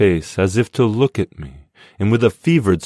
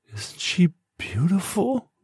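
very high, cracked, crackling whisper; 11 semitones higher, 7 dB quieter than usual. Becky lets the narrator look inside her jacket, in a crackled whisper. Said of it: "She whispered in a crackled voice".

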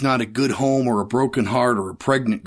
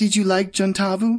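shy, timid, hopeful pride, high voice; 8 semitones higher than usual. Narrator reading a story, a man asking the narrator about Gentavo: timid pride. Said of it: "He says it with timid pride".

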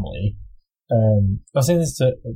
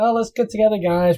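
put-on laid-back frog voice, higher; 10 semitones higher than usual. Describing the frog as the most chill guy: imitating chill Kermit. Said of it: "the most chill guy".

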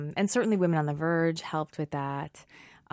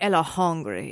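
put-on funny little French-sounding accent; 3 dB louder than usual. Quoting how the baby talks, in a funny little French accent. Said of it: "I don't know why she sounds French".

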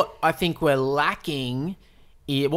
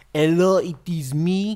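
put-on over-the-top French accent; 2 semitones higher than usual. Discussing a film, the speaker imitates John Malkovich's exaggerated French accent. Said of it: "he makes a meal out of that accent".

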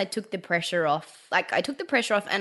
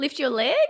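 put-on upward questioning rise, higher; 6 semitones higher than usual. Retelling early yoga teaching cues: imitating rising upward inflection. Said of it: "It's like".

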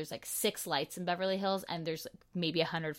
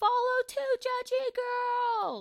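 long, drawn-out, very high-pitched holler; 4 dB louder than usual. The speaker jokingly describes yelling out of a car window, retelling a yell. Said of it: "I yelled".

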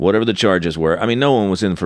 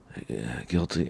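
very quiet, hushed mumble under the breath; 6 semitones lower, 12 dB quieter than usual. Recalling answering the judge who asked how he pleads: retelling a mumbled plea. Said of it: "I like mumbled it".

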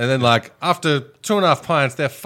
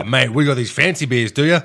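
mocking smug older voice. Retelling a smug old customer asking about fancy beers: imitating a smug old customer.

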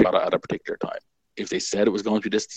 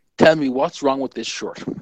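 put-on, high, full-throated shouting at top volume; 5 semitones higher, 4 dB louder than usual. Recounting the head of production walking into the office, retelling a full-voice shout. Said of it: "shouting at the top of his voice".

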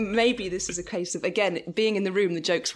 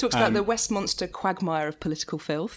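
usual speaking voice

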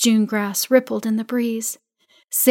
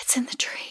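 barely voiced, hushed, frightened whisper; 3 semitones higher, 11 dB quieter than usual. Seeing glowing eyes high in the tree, she is whispering. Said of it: "she whispered".

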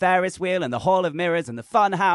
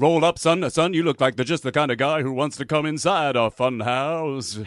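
fake jolly fun voice; 4 semitones lower than usual. Inviting a young man inside the fun house: fake fun voice. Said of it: "Please stop doing that fake fun voice".

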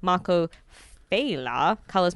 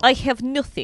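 put-on Russian accent, pitched higher; 8 semitones higher, 4 dB louder than usual. Recapping an X-Men comic, the speaker voices Colossus: Colossus Russian accent. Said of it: "That's my Russian accent".

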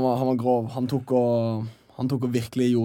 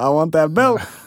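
loud, raised, yelled voice; 4 semitones higher, 7 dB louder than usual. Retelling what a fighter said after the fight: imitating a scream. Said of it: "Han skreik på svensk".

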